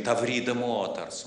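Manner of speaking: ordinary talk, nothing marked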